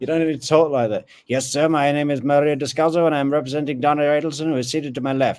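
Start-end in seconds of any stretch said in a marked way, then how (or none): 1.3-5.4 fast-talking, slick, rattled-off patter. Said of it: "fast shooting, slick talking Miami lawyer".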